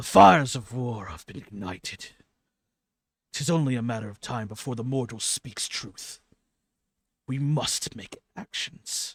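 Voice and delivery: very loud, very hoarse voice. Voicing a being who answers the player's statement: very hoarse voice. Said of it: "a very hoarse voice".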